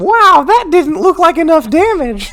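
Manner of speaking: put-on dim-witted, dopey kid voice, pitched very high. Answering what the dumb kid in the stands says: dumb kid voice. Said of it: "What does the dumb kid say?".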